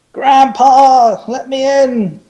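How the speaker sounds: shrill, very high, loud shout. A character shouting to Grandpa to be let in. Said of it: "I shout".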